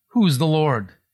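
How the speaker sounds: ordinary talk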